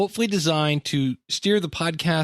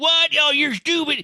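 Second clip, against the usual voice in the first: put-on very high, crotchety, grumpy old man voice; 11 semitones higher, 3 dB louder than usual. Recalling a podcast character they once did, the speaker does a grumpy old man voice. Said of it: "the grumpy old man talk like this".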